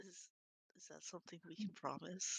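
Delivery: whispered, very quietly. A player, in character, whispers to the rest of the party. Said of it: "I'm like whispering to to".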